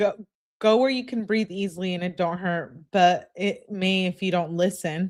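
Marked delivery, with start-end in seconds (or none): none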